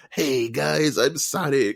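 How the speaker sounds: very slow, chill surfer-dude drawl. Explaining how Sonic talks, doing a Sonic voice. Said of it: "he has like this weird nineties surfer dude".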